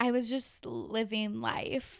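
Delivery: bad put-on voice with heavy vocal fry. Retelling a recent trip, doing a Kourtney Kardashian impression. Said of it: "my best Kourtney Kardashian impression".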